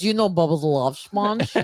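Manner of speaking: put-on, thick Bosnian accent. Retell a man in the pool asking you a question, in a Borat-like very thick Bosnian accent. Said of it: "with a very thick Bosnian accent".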